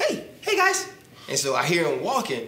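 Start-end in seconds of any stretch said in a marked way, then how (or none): 0.0-0.9 tiny, very high-pitched little voice. Recalling someone calling out one night: Joe Gills voice. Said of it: "He had like a little high-pitched voice".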